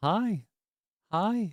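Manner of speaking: high raven voice mimicking human speech. Speaker compares their own voice to a talking raven from a video, talking raven imitation. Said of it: "a raven or a crow where it's like".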